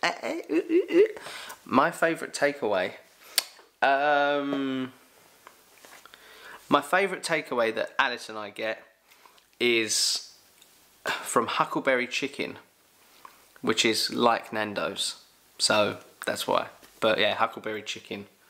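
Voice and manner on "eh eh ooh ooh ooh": high, loud excited squeals. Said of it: "See how excited I am".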